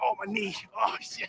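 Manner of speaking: put-on pained delivery. A speaker acts out what Coach Vaughn would say before drills, imitating Coach Vaughn in pain. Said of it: "He'd be like".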